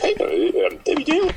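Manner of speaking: very high, slow, drawn-out posing too-cool voice. Mocking a show host who thinks she's cool: mocking imitation of Debbie Daly. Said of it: "she, like, thinks she's so cool, and she's like".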